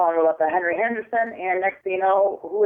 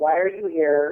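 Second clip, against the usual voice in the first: put-on very dark, deep, slow voice; 2 semitones lower than usual. Retelling a voice heard on a recording: imitating a very dark, deep, slow voice. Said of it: "in a very dark voice".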